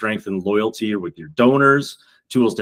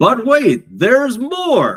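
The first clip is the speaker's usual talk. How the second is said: loud, very high, swooping cheesy infomercial voice; 13 semitones higher, 5 dB louder than usual. Presenting free tools to viewers, slipping into a cheesy infomercial voice. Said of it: "here comes my cheesy infomercial voice".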